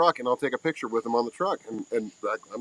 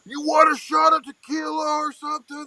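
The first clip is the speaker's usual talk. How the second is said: mock drunken yell, much higher; 13 semitones higher, 3 dB louder than usual. Telling of waiting in line very drunk, the speaker retells yelling at the Breckenridge girl. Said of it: "I was yelling like".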